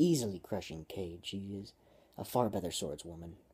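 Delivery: plain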